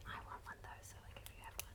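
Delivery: low unvoiced whisper.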